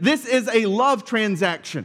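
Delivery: ordinary talk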